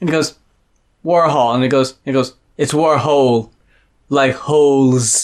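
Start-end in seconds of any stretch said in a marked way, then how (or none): 2.6-5.3 put-on cartoon voice, much slower. Retelling what a man said, in a Stewie Griffin impression. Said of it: "why are you doing this fucking Stewie Griffin impression".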